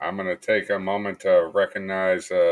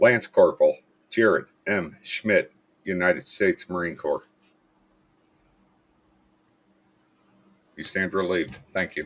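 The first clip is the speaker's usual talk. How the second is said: on the verge of crying. Finishing a list of service members' names, holding back tears. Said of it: "Sorry, I'm gonna cry".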